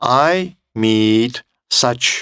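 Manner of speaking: very slow, drawn-out, word-by-word build-up.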